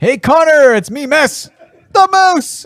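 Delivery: very high, unhurried, drawn-out voice. Retelling a parody where Mark Messier leaves voicemails: imitating Mark Messier in a parody. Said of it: "He's like".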